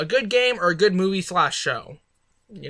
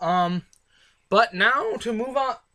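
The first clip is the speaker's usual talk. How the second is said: voice breaking and cracking mid-phrase; 3 semitones higher than usual. Moving on after talking about Christmas gifts, voice cracking. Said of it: "awesome voice crack".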